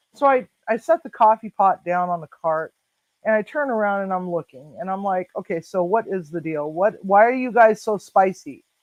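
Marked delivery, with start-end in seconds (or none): 5.4-8.5 put-on joking, loving tone. Retelling own words to arguing residents: retelling a joking, loving remark. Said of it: "I'm saying it in a joking, loving manner".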